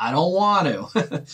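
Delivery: put-on slow little-kid voice. Describing a procrastinator's self-talk, speaker imitates a little kid. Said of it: "And you sound like a little kid".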